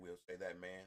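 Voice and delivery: plain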